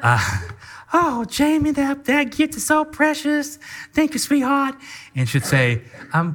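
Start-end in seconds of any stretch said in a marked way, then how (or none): 0.9-4.7 Southern belle voice, pitched very high. Retelling Christmas morning when Courtney opened a gift from Jamie, imitating Courtney as Southern belle. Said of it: "it's always a Southern bell".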